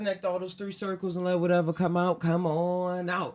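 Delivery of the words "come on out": slow, drawn-out, deliberately slowed. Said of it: "saying it slow".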